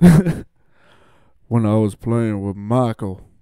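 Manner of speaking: booming, very deep, slow voice. Doing an impression after being asked: Scottie Pippen impression. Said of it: "I'm gonna do my best Scottie".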